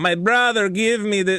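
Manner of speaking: heavy put-on Spanish accent. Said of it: "she didn't have that heavy an accent, but for the sake of the story".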